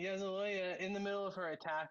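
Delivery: ordinary delivery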